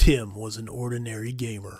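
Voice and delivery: movie trailer announcer voice. Trying out a movie trailer voice to introduce Tim, an ordinary gamer. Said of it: "movie trailer voice?".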